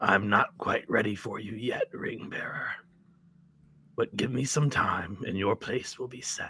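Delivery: rough, crumbling, gravelly, decayed rasping voice. A purple-cloaked figure addresses the ring bearer, in a gravelly, decayed voice. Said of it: "a rather gravelly, decayed voice".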